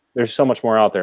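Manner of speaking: plain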